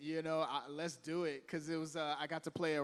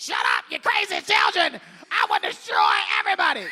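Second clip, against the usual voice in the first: very loud, raging, full-blast screaming; 8 semitones higher, 13 dB louder than usual. A voice actor recalls a role with lots of screaming: screaming Coach Cretan voice. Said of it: "there's a lot of screaming like".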